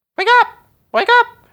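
very high, very loud, shrill bird call. Describing a bird calling outside your bedroom before dawn; really loud annoying bird. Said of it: "that annoying type of really loud bird".

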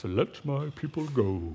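put-on stretched-out, old-time grand screen-epic delivery. Mentioning The Ten Commandments on TV, Charlton Heston impression. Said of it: "That's my best Charleston Heston right there".

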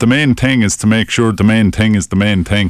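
ordinary talk, nothing marked

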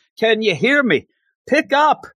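high put-on yelling. Retelling a woman of about 90 yelling into his voicemail: imitating her yelling. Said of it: "she starts yelling".

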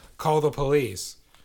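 loud, play-acted yelling. Retelling a manager holding someone in a headlock, calling out to staff: imitating a manager shouting. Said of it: "he's shouting".

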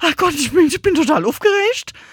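shrill, very high, strained voice full of stress. Showing how the voice sounds under stress: higher, faster stressed voice. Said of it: "im Stress haut die Stimme nach oben ab. Das heißt, wir werden schneller, wir werden höher".

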